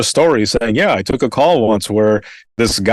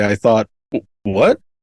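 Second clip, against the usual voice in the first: normal talking voice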